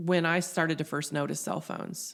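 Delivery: ordinary delivery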